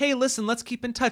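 high, nonchalant, dismissive tone.

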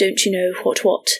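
very proper English accent. Describing an audiobook character they voiced, in a very proper English accent. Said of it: "very proper, very English accent".

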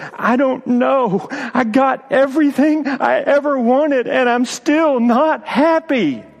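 put-on very high, slow, sob-broken child's voice. Retelling a crying child's answer to his parents: imitating a child sobbing and gasping. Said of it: "in sobs and gasp".

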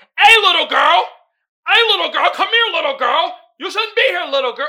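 loud, creepy, repeated coaxing call. Retelling a movie scene where a man calls to a woman, imitating a creepy man. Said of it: "how they were interacting is creepy".

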